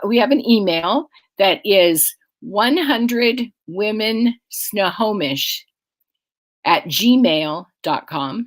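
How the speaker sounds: speaking slowly at a deliberate pace. Giving out the group's email and website address, speaking slowly. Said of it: "and I'll say it slowly".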